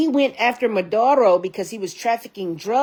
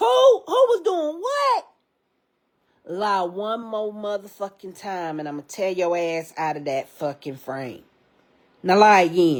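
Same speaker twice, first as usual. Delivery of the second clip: swooping, animated, confrontational put-on persona voice; 3 semitones lower than usual. Calling out a man quoted as lying, in Jennifer voice. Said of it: "in my Jennifer voice".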